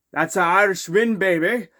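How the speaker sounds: put-on Irish accent. Celebrating a Leafs win on Saint Patrick's Day: Irish accent. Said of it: "spill in my, an Irish accent".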